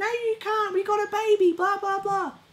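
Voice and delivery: very high put-on falsetto, mock voice.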